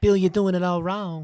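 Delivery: bad, shrill, high, loud Southern belle drawl. Trying an impression of Ralphie May talking to Bill, a bad impression, like Blanche DuBois. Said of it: "that was like Blanche Dubois".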